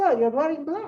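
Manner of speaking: put-on line spoken with a Danish accent. Telling a historical story, voicing a queen addressing a visitor: Queen Marie's Danish accent. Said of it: "However you, however Danish accent sounds".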